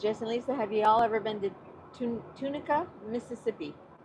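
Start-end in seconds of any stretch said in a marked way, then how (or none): none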